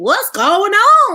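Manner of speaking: very high, loud, swooping sing-song call, drawn out on "on". Retelling how everyone reacted to a racing league's move: NASCAR impression. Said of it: "that's my impression of nascar".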